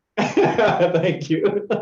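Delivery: broken up with laughter. Answering a returned compliment: laughing while saying thanks. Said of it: "*LeDerick laughs and says*".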